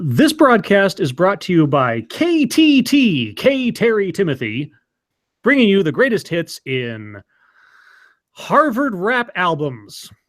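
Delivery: radio commercial announcer voice. Asked to do a radio ad for the station, improvise it: radio ad announcer voice. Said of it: "do it like a radio ad for the station".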